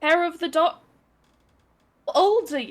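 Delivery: put-on British accent. Explaining the hangover cure to another player in character: put-on British accent. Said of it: "Why are you keeping the accent going?".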